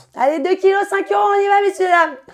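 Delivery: very high, very loud, shrill hawker's market shout. Explaining a French expression to a friend, demonstrating fishwife market shouting. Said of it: "c'est quoi parler comme une poissonnière?".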